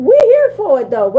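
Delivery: high, loud, laughing, mocking taunt.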